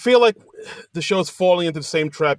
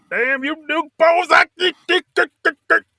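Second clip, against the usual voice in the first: put-on angry sheriff voice, higher pitch; 12 semitones higher than usual. Imitating the character after describing him angry: Boss Hogg voice. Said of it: "That's my Boss Hog".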